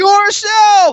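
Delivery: high, loud, emphatic shout.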